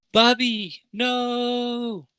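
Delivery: very high woman's yell with long drawn-out no. An unseen woman cries out around the corner, woman's voice yelling. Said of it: "a woman's voice yell like".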